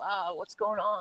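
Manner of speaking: laid-back, mellow, soft, slow and easy. An actor shows how he dialed back his character's voice, mellow Marty voice. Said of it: "he's just mellow".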